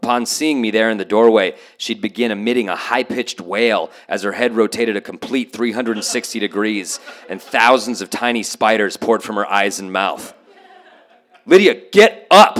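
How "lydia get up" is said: mock, very high, very loud authoritative voice. Retelling waking a sister each morning: retelling an authoritative command. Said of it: "in my most authoritative voice".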